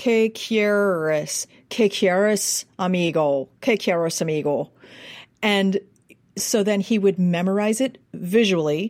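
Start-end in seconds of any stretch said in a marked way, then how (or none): 0.0-4.7 put-on Spanish words spoken with an Irish accent. Showing the phonetic recording made for a learner: Spanish with an Irish accent. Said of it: "phonetically record it for him with an Irish accent".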